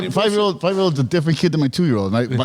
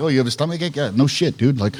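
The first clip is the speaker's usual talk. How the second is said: plain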